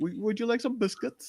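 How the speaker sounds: clumsy fake British accent, very high and very soft. Taking a turn at a british accent after saying theirs is bad: bad british accent. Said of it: "mine's bad".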